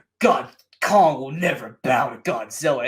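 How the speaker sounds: deep, mocking put-on voice. Complaining about an actress in a movie, mimicking her line: Rebecca Hall deep voice. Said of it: "and doing like a deep voice".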